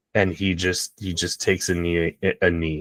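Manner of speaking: ordinary talk, nothing marked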